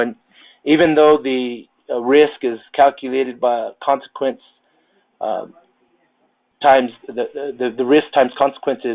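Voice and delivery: tongue-tied, stumbling and tripping over repeated words. Presenting a statement on risk to an audience: tongue-tied, stumbling over words. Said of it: "I'm getting tongue-tied here".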